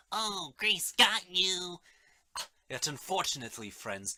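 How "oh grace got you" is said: put-on high, very slow, small-child pronunciation and voice. Mocking a title as if pronounced by a small child: small child's voice. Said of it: "It sounds as though a small child did pronounce it, like".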